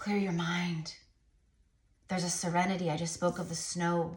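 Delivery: gentle, really soft, quiet, soft-spoken voice. Guiding her listeners to clear their minds, really soft voice. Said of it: "my voice just got really soft like this".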